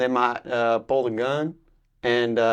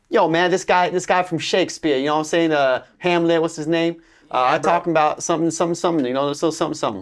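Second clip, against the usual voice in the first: vernacular American dialect accent; 6 semitones higher, 4 dB louder than usual. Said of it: "do it not perfect".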